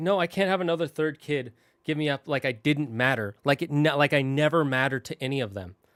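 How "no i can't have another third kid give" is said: plain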